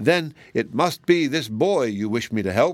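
ordinary delivery

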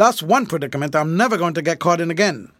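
plain

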